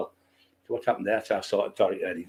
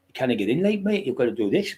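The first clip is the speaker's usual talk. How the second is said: put-on Newcastle accent; 4 semitones higher than usual. Retelling what the two doormen from Newcastle told him at the club door, imitating a Geordie accent. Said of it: "Geordie accent".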